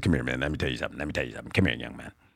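low, deep, thick voice. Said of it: "this deep, thick voice".

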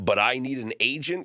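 agent lifted high with rising pitch. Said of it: "question mark".

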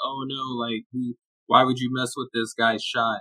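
imitated sarcastic tone. Retelling a tweet about a player's reworked shot: imitating a sarcastic tone. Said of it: "sarcastically tweeted".

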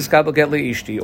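ordinary talk, nothing marked

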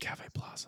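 hushed, breathy whisper, barely voiced. Praising the plaza, noting you have to whisper it: whispered cafe plaza. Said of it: "you have to like whisper it".

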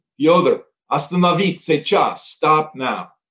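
Russian accent, best-effort attempt. Retelling calling after a man who took off, speaking russian. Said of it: "in my best Russian possible".

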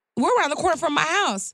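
high-pitched, exasperated retorting tone. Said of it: "and I said".

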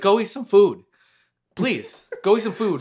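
fake accent, slowed down. Joking about a new insult, imagining saying it earnestly, in a put-on accent. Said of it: "Sorry for the accent".

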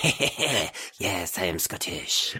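put-on thick, heavy French accent. Describing a movie role, doing Christopher Lambert with a thick French accent. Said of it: "with his French as fuck accent being like".

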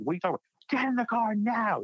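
very high, rushed, frantic, acted panicked screaming. Speaker retells a terrified passenger shouting to get in the car: retelling a panicked yell. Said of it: "He's like yelling and screaming at us".

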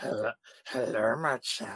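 low, soft, creepy voice.

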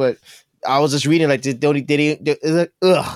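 stuttering, stammering speech. Giving an opinion on driverless cars, stuttering. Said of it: "I'm stuttering".

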